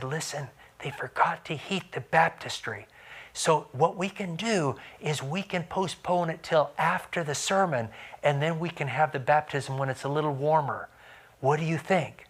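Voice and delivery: hushed, under-the-breath half-whisper. Retelling what was said to a man about to be baptized: retelling a half-whisper. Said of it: "And I whispered to him".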